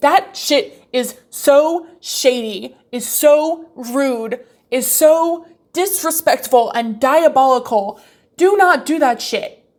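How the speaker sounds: heated, emphatic, slow, worked-up speech. Warning against bringing up plans in front of uninvited people: getting worked up. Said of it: "I'm getting way too worked up".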